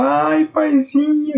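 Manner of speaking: mock very high, tearful, weepy crying wail. Mocking believers who pray to god by weeping: mock crying. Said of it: "e começa a chorar como faz".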